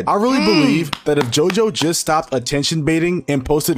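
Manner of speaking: usual speaking voice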